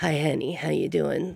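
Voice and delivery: seductive put-on sultry voice, low and creaky. Demonstrating the voice used when playing a sultry person: sultry voice. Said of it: "when I play like a sultry person, I talk like this".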